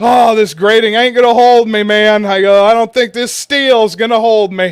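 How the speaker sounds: mock-terrified, acted scared tone. Recalling climbing onto a high roof, the speaker repeats what he said, retelling his own fear. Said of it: "that's just the fucking ultimate fear".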